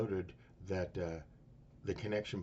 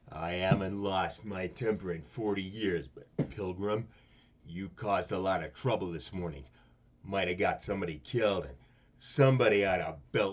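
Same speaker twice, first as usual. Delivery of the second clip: booming, very loud put-on movie-star voice; 9 dB louder than usual. Starting a celebrity impression bit: John Wayne impression. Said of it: "let me do my celebrity. Okay, John Wayne".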